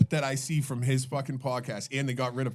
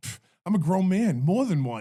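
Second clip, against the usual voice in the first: put-on wild West Virginia mountain accent, loud and high; 6 semitones higher, 5 dB louder than usual. Retelling a podcast clip, imitating Jason Williams's West Virginia accent. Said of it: "His accent is fucking wild".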